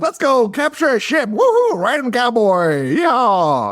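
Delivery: very high-pitched, shouted, gleeful whoop. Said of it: "He's like".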